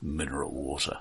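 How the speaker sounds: deadly grim, deep, low and hushed. Speaker showing how two words can still make certain people corpse, grim tone. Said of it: "in a grim tone of voice".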